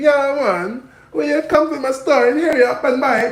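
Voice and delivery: put-on very high, loud Chinese Jamaican accent. Showing listeners how the owner of a rented spot talks, in Mister Lee's Chinese Jamaican accent. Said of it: "this is the funniest accent you will ever hear".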